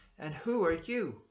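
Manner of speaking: sharp, very loud, high-pitched delivery. Narrator reading a character's line as he stares hard at the passenger: said sharply. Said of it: "He said sharply".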